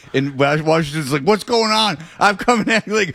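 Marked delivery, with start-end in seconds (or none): 1.3-3.0 heated, high, confronting yell.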